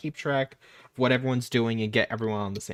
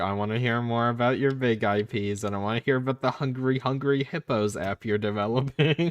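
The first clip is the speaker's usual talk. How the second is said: usual speaking voice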